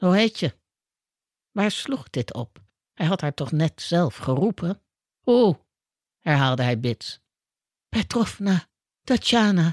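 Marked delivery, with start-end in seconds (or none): 7.9-9.7 whispered, much higher pitch. Asked her name by a man behind a desk, she answers, whispered. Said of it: "fluisterde ze".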